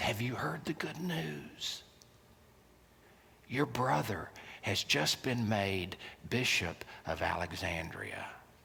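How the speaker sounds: secretive, hushed half-whisper, very quiet, barely audible. Retelling a story where Satan tempts a hermit: Satan half-whispering. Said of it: "he came up to him and he whispered".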